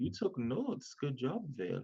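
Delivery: slow whisper from the corner of the mouth. Voicing a character who quietly praises a companion: whispering out of the side of the mouth. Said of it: "he whispers at the side of his mouth".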